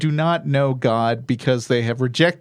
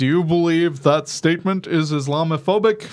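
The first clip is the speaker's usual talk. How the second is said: pointed, probing senator-style voice; 3 semitones higher than usual. Retelling a senator's question at a Budget Committee hearing, in a Bernie Sanders voice. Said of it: "totally tell that you're doing a Bernie Sanders voice".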